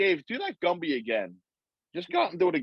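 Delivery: ordinary delivery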